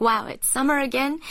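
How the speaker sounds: usual speaking voice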